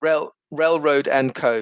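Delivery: very slow, careful delivery of the name.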